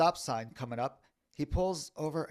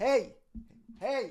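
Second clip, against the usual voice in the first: mock calling out in a raised, high voice; 10 semitones higher, 4 dB louder than usual. Retelling calling after a bus driver who got out: retelling a raised voice. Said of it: "I start to raise my voice so he can hear me".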